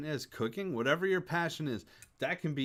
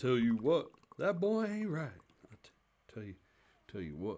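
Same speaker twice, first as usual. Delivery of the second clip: put-on Texan cartoon voice, lower; 4 semitones lower than usual. Doing catchphrases after a joke about cartoons: Hank Hill voice. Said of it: "I can't do Hank Hill very well".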